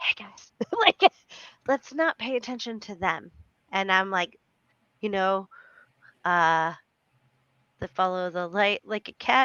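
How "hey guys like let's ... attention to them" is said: conspiratorial, secretive aside. Showing how the speaker says a line to the group; very quiet. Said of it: "And I say this very quietly".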